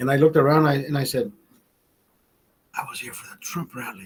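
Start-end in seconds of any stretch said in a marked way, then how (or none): 2.7-4.1 fearful, scared whisper, very hushed. Recounting answering a woman's question about Las Vegas, retelling a whisper. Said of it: "Like I whispered".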